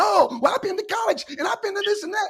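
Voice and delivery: very high-pitched, whiny crybaby voice. Describing the other speaker's reaction to correction: mock whining. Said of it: "You start whining and".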